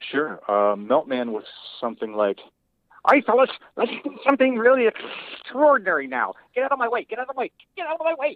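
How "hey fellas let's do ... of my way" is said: small, very high voice, words rattled off quickly. Recalling a character from the show, the speaker does the Meltman voice. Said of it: "He was very small, sort of a Wallace Shawn character".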